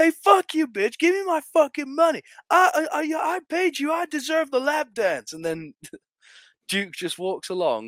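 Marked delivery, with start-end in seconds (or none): 0.0-5.3 acted mock shouting, much higher pitch. Describing a club scene, imitating a guy shouting at a woman. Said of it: "there's a guy shouting at her and going like".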